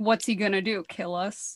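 mock tipsy, giggly drunken voice. Retelling a woman's reaction to threatening phone calls, imitating drunk giggling. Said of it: "all drunk up on her whiskey, is just like giggling".

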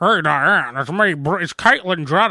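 plainly masculine voice, unsoftened. Mocking how the voice sounds: Bruce Jenner voice. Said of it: "Bruce Jenner has the".

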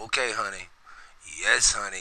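easygoing, very calm, hushed, soft voice. Imitating Paw Paw answering his wife: imitating Paw Paw's very calm voice. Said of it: "it was always with a very calm voice".

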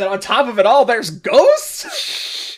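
very high, swooping, rising shriek. Reading a scene aloud where a character screams: screaming. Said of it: "Before Belle screams".

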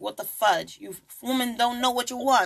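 put-on Italian-sounding accent. Retelling what the man said after women left him: Italian-sounding accent. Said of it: "I sound like an Italian".

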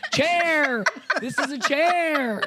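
shrill, piercing yelling. Retelling an elementary school basement scene, imitating Miss Boatman yelling. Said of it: "Down there yelling at them".

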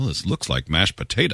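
understated, bone-dry put-on delivery. Retelling a quiet dinner remark by a friend's dad: imitating Perry's dry voice. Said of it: "totally the voice we do".

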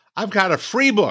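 excited voice climbing high. Asked what he has to plug, he answers excited, voice rising. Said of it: "He got so excited, his voice went up and up".

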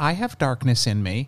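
play-acted, sweet, gentle, soft-spoken delivery. Retelling a young student's reply about her dark action figure story: imitating a sweet-spoken student. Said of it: "she very sweetly says to me".

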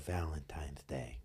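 quiet, unhurried whisper.

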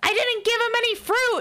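very high, protesting, defensive yell. Retelling how someone yelled back in defense while being chased: retelling a defensive yell. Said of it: "Spencer just yells in defense".

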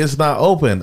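loud screaming, yelled outburst. Recounting how a woman answered a question about the lobby, retelling a scream. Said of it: "she just starts screaming at me".

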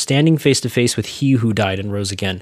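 ordinary delivery

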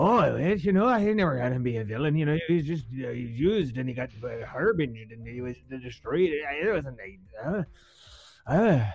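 put-on Scottish accent. Acting out Grant Morrison answering a question: Grant Morrison accent impression. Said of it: "don't write in about this accent".

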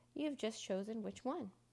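plain reading voice

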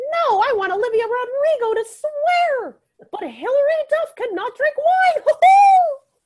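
high, squeaky cartoon mouse voice. Speaker acts out what Mickey Mouse would say, doing a Mickey Mouse impression. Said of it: "the best be- Mickey Mouse impression I've ever done".

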